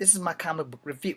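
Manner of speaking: ordinary talk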